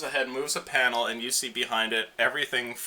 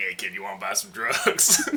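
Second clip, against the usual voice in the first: demonic voice, lower; 3 semitones lower than usual. Voicing what the demonic voice of a magic item says, in a demonic voice. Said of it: "The demonic voice is like".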